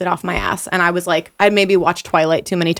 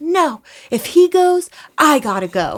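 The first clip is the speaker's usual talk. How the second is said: high, very slow, drawn-out, wild, unhinged acted yell; 9 semitones higher than usual. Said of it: "yelling at the cops like a total psychopath".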